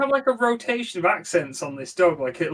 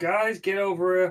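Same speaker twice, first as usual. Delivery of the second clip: plain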